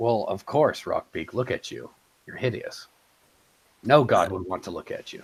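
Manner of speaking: dead serious, no joking, no laugh. Playing a character speaking to rockbeak, in serious deadpan. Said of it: "just complete serious deadpan".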